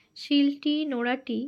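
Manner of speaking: ordinary talk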